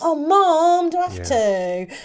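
very slow, grudging, reluctant, drawn-out delivery. Picturing a Bible scene, imitating Jesus as a reluctant son. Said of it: "Jesus being like".

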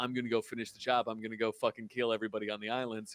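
ordinary delivery

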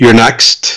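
teasing, mocking tone. Voicing a character taunting an enemy with a finger gesture: teasing. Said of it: "teasing him, like".

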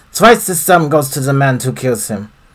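loud, put-on German accent. Voicing the foreman in a game cutscene: german accent. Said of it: "again, German accent".

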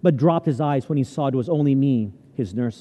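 ordinary delivery

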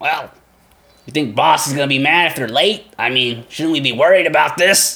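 uneasy, hesitant orc monster voice. Telling a story, the speaker voices one of two orcs on patrol; orc voice. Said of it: "The other one speaks up".

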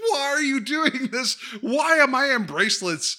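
mock frantic, freaked-out shriek, very high. Retelling a scene where a scared kid screams at the detective: imitating someone screaming. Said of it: "screaming at, uh, the, the detective".

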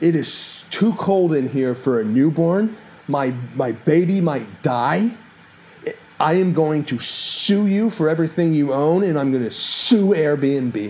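put-on screaming, irate rant. Speaker recounts the other guy screaming at them at 1 a.m., retelling a scream. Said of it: "screamed at me, like".

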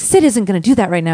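full-on, put-on Cockney accent. Retelling how a manager spoke in videos: imitating a Cockney accent. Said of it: "she's doing it in a full Cockney accent".

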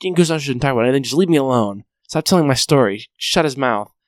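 play-acted, all-mad, worked-up angry rant. Retelling a scene where the main character breaks a phone: imitating someone getting mad. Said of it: "he gets all mad".

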